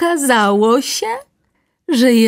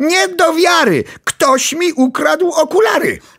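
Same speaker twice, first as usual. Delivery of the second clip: shouted out, yelling; 5 semitones higher than usual. Narrator voices mr. hilary as he searches everywhere for his glasses, shouting.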